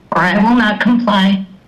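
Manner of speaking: ordinary delivery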